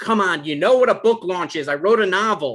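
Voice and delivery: loud shout. Explaining to an ex-partner what a book launch is, yelling. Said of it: "Why are you yelling at me?".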